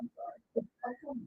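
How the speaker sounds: very soft, tiny, meek, barely audible voice.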